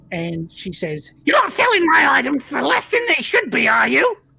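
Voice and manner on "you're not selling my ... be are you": very high, loud, shrill, withered hag voice. Game master voicing a hag who walks out and speaks: high shriveled hag voice. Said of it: "with this high shriveled voice".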